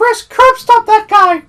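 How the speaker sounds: bad, shrill cartoon mouse voice, very high and loud. Trying to voice a Winnie the Pooh line and slipping into a bad Mickey voice. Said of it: "That's Mickey".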